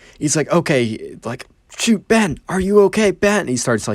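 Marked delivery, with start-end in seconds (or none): 1.8-3.4 mock anxious, high, worried yelling. Retelling a babysitter searching outside for a missing boy: imitating someone yelling out. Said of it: "yelling out for Ben".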